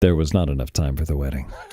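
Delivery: very deep, low narrator voice. Someone asks you for this line, so give it in a Morgan Freeman voice. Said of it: "in a Morgan Freeman voice".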